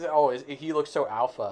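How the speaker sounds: ordinary talk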